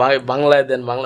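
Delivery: plain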